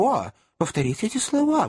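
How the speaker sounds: sudden, high, heartfelt outcry. Mr. tupman jumps up and begs the lady to repeat her words: exclaiming. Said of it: "воскликнул он".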